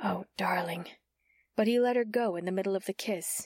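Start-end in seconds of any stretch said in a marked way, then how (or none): 0.0-0.9 murmured, much quieter. A narrator reads a woman's line to a man during a kiss: murmured. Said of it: "she murmured".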